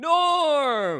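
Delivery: very loud, high, long drawn-out bellow. Asked to do a Cheers impression of an episode: Cheers impression. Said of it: "do a Cheers impression right now".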